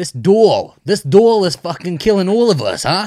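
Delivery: thick New Jersey accent. After someone says nobody there has one, speaker demonstrates a thick New Jersey accent. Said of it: "what's a Jersey accent sound like?".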